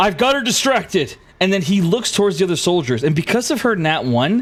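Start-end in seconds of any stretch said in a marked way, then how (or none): 0.0-1.1 high-pitched, loud shouting. Voicing a knight calling out to allies: yelling. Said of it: "Avery yells at, he says".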